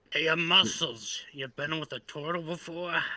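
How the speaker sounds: put-on drunk, tipsy slurred voice. Voicing an intoxicated character asking about a turtle: acting drunk. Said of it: "I'm a little intoxicated".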